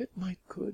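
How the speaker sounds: tiny, small, hushed, high voice. Reading a story aloud, the narrator gives a character's reply in a tiny voice. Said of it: "she said in a tiny voice".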